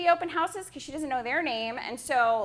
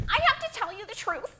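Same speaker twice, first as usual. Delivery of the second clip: higher-pitched woman's voice; 5 semitones higher than usual. Retelling a visit, speaker does the voice of a lady who came in: imitating a woman's voice. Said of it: "I'm going to do her voice".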